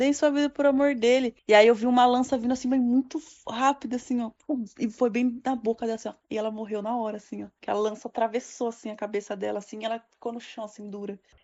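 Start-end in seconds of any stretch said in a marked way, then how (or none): 0.0-1.3 woman shouting repeatedly. Recounting a camp attack, the speaker imitates a woman shouting. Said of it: "ela ficava gritando".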